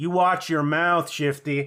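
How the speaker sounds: slow, low-energy movie delivery. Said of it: "like [name] would deliver the line".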